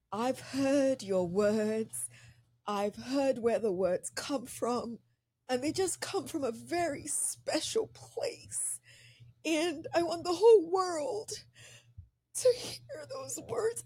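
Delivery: words spoken through tears. Speaking to an author about their book, the speaker is crying. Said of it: "I don't know why I'm crying".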